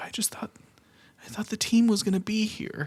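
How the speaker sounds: small, near-tears, welling-up voice, pitched way up. Retelling a sad child's words after school: imitating Cheery welling up. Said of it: "she's, like, welling up".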